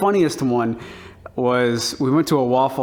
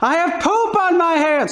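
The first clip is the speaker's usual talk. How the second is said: put-on very high, shrill, acted little-kid scream; 3 dB louder than usual. A man retells a child repeatedly yelling in public, imitating a child screaming loudly. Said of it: "Really, really loud".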